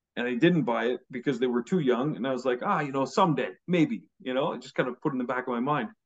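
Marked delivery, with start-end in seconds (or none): none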